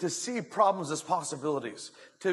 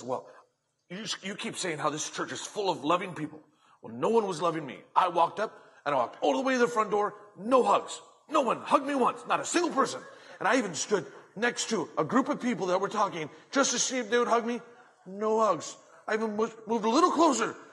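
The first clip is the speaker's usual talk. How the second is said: put-on huffy, indignant woman's voice, higher pitch; 4 semitones higher, 3 dB louder than usual. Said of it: "all huffy and puffy".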